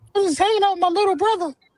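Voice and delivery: very high-pitched voice. Mocking a friend who was told to put bass in his voice: imitating Jayla's voice. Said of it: "you sound exactly like that".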